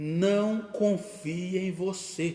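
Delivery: very slow, loud, deliberate, word by word. Addressing a brother after promising to speak slowly: very slow. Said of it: "eu vou falar bem devagar".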